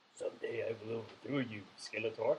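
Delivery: put-on, low, beastly henchman character voice. Acting out He-Man characters, the speaker does a Beast-Man voice. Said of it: "but I can do a good Beast-Man".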